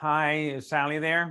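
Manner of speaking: flat, unenthusiastic, low-energy delivery. Speaker demonstrating how most admissions reps sound on the first phone call, low-energy rep. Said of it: "that's the level of energy that most reps have".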